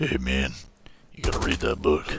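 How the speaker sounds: put-on older smoker woman voice. Retelling how Firestorm pressured him to read, imitating Firestorm in a smoker-lady voice. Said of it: "sound like a 50-year-old smoker lady".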